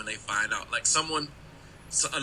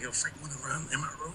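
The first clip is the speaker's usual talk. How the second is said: soft, hushed, quiet half-whisper; 3 semitones higher, 9 dB quieter than usual. Recounting a remix premiere, half-whispering to the man whose party it was: retelling a half-whisper. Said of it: "I'm whispering like".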